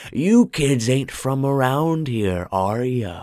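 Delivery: hoarse, raspy, husky voice. A man pops up from behind the register, calling to the kids in a hoarse voice. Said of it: "called out in a hoarse voice".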